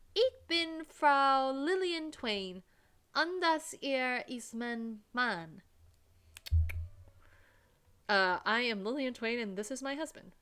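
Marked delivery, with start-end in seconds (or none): 0.2-5.6 put-on loud, deliberately obnoxious American accent. Introducing herself and her husband in deliberately mispronounced German; loudest, most obnoxious American accent. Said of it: "my loudest, most obnoxious American accent".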